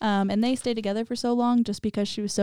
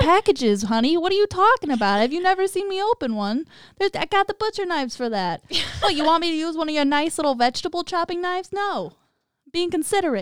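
put-on Boston accent, pitched up; 8 semitones higher, 3 dB louder than usual. Acting out Bundy's side of a conversation, the speaker does a Boston accent. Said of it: "I like the accent you gave him".

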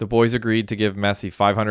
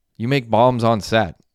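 usual speaking voice

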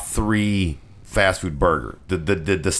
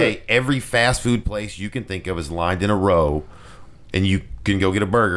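ordinary delivery

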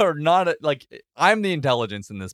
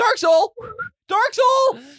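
shrieking, very high, loud scream; 5 dB louder than usual. A player in a tabletop game, fleeing a golem, calls to a teammate, screaming. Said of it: "And I'm screaming".

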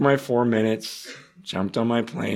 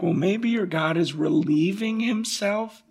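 very high, scoffing, mocking taunt, acted out; 10 semitones higher than usual. Retelling Elijah taunting a screaming crowd, retelling Elijah's mockery. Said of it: "Just mocking".

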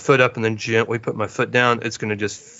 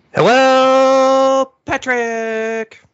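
very high, loud cartoon voice, hello stretched long; 7 dB louder than usual. Podcast host greeting a co-host, in a horrible SpongeBob impression. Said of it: "that's my horrible SpongeBob impression".

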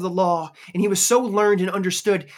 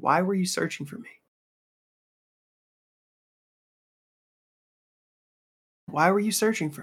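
calm, soft, simple delivery; 2 semitones lower, 5 dB quieter than usual. Retelling Jesus answering his anxious mother, imitating Jesus's calm reply. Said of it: "it was the calmness you would guess".

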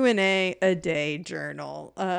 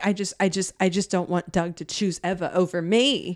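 ordinary talk, nothing marked

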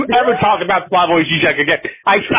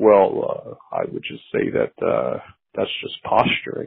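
soft, breathy, mellow murmur; 11 semitones lower, 8 dB quieter than usual. Quoting what Noam Chomsky said when asked about Žižek: mellow Noam Chomsky voice. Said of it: "Chomsky mellow voice".

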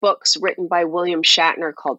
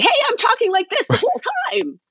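very high, swooping, obnoxious hype-host voice. Retelling an old hosting gig: imitating own obnoxious high-energy host voice. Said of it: "that really obnoxious, high energy".

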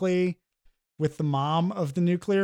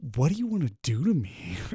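put-on creepy delivery, lower; 3 semitones lower than usual. Retelling a courtroom scene where Tobey Maguire asks the prosecutor: imitating a creepy line. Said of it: "In this really fucking creepy way".

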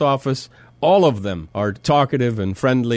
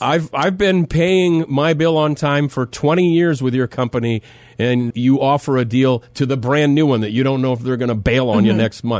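normal talking voice

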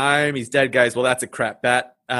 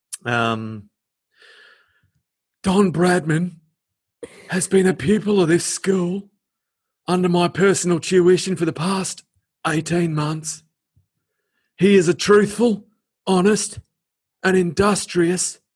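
put-on high, pitched-up wizardly voice with Australian accent; 5 semitones higher than usual. Reading a headmaster's letter about Don Bradman aloud: Aussie Dumbledore voice. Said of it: "Aussie Dumbledore".

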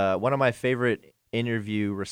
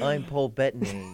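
put-on soft, fuzzy voice with a British accent; 2 semitones higher, 4 dB quieter than usual. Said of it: "you sound like [name]".

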